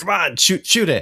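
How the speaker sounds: stressed, very high-pitched urging voice. Describing a little game buddy who reacts as the player gets closer: imitating a stressed buddy. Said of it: "he looks a little like stressed".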